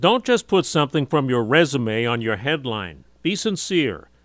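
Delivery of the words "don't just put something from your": plain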